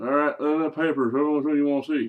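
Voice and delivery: put-on clumsy West Virginia accent, dad voice. Retelling how your dad agreed to the movies, do a very bad West Virginian dad impersonation. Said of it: "I'm doing a very bad dad impersonation".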